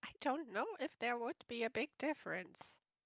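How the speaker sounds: very quiet, barely audible mutter under breath. Muttering a remark in character under the breath: muttering under breath. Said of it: "I just mutter, like, under my breath".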